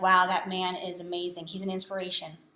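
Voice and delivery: ordinary talk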